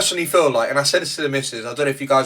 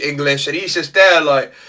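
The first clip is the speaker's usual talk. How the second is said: normal talking voice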